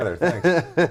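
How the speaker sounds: high, loud laughing retort.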